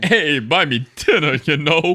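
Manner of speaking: belted out loudly like a club comic. Joking about women coworkers who touch your shoulder when you laugh, in a Rodney Dangerfield voice. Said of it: "every time you do that voice".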